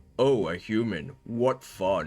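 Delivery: very slow, dragged-out, deep goblin voice. Narrating a Trow goblin greeting a human, in a deep goblin voice. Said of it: "says one in a deep voice".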